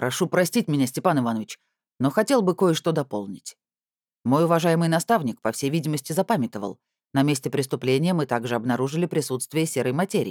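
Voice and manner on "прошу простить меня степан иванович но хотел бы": ordinary delivery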